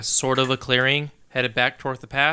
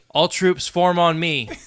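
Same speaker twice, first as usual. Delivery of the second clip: raised, pitched-up shouting; 4 semitones higher, 3 dB louder than usual. Playing a character calling troops to him in a fight: yelling an order. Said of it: "I will yell out".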